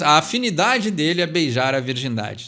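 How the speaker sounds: ordinary talk, nothing marked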